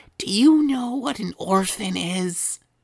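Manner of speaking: hushed voice. Voicing a character who leans in close to ask: whispering. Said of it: "leans in real close and he whispers".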